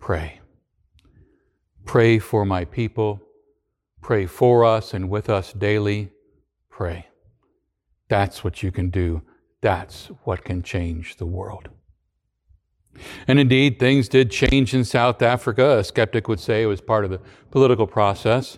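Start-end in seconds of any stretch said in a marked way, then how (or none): 0.0-11.7 soft, gentle, quiet, hushed delivery. Retelling the Archbishop's answer to a silent crowd: speaking softly. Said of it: "And he said softly".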